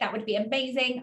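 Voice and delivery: ordinary talk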